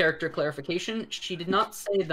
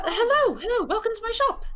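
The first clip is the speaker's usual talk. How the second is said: put-on very high young gnome voice; 5 dB louder than usual. Voicing a young gnome shopkeeper greeting customers: young female gnome shopkeeper. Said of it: "a young female gnome who is behind the counter".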